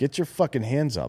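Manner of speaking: put-on yell. Retelling watching a hitter at a bar, imitating own scream. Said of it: "I'm just screaming".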